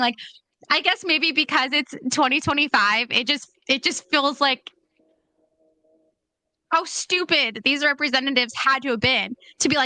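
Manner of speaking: words broken up by giggles, talking through laughter. Speaker apologizes for laughing while making a point: laughing while talking. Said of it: "I'm sorry I'm laughing".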